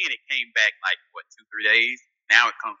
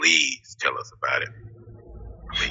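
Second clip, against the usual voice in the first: creepy, breathy, whispered near-whisper; 9 semitones lower, 5 dB quieter than usual. Urging another speaker to go ahead and tell: creepy tone. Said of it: "Why you sound so creepy when you said".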